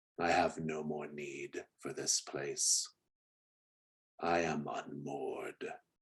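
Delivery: unearthly, hushed, very soft, otherworldly voice. Narrator voicing a priest who stands up to speak, in an otherworldly voice. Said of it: "he says in this otherworldly voice".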